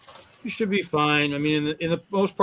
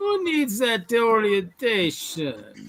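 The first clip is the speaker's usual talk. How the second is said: put-on sing-song Jamaican lilt, swooping high; 6 semitones higher than usual. Playing along in a group scene, in a fake jamaican accent. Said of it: "some guy from Nova Scotia trying to be Jamaican".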